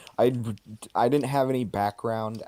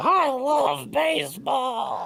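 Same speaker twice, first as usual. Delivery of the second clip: ghoulish baseball-cap fan guy voice, very high; 3 dB louder than usual. Riffing on the character as a ghoul: baseball cap guy voice. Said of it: "the baseball hat guy voice".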